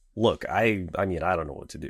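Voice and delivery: normal talking voice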